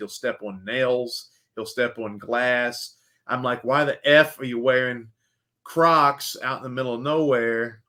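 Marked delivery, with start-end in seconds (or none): none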